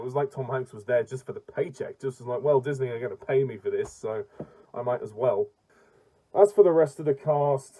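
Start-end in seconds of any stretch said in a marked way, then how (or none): none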